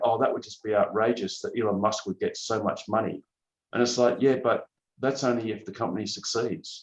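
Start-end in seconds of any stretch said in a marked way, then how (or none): none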